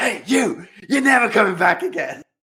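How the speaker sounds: acted yell. Retelling how a woman shouts through the reception window at a client: retelling a shout. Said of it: "she shouts at her like".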